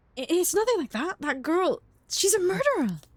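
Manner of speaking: put-on high anime-style boy character voice. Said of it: "I'm sounding like an anime boy".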